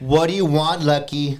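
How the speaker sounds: put-on fed-up irritation. Retelling the ex answering a phone call: imitating someone real annoyed. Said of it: "Like that, real annoyed".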